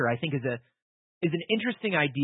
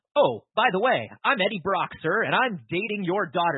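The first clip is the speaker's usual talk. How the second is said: put-on smarmy character voice, higher; 4 semitones higher than usual. Acting out a movie scene where a character introduces himself: smarmy Eddie Brock impression. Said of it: "Eddie Brock runs up to Captain Stacy".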